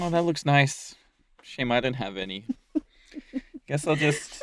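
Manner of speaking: soft, woe-is-me pretend sadness. Talking with another speaker, acting out an imagined person, mock-sad. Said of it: "had the vibe of like someone's".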